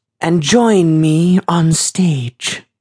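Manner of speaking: loud, high, grand theatrical stage proclamation. Narrating a stage show, a girl addresses a moving hat in a loud, dramatic voice. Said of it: "in a loud, dramatic voice".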